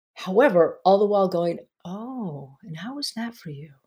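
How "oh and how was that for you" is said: soft, hushed, calm therapist voice. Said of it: "your therapist's voice".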